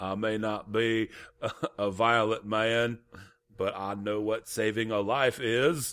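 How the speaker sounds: put-on very strong Southern movie accent. Imitate the lead-in to a film you saw in a trailer, in Andrew Garfield's very southern accent. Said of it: "Did I just nail Garfield's accent".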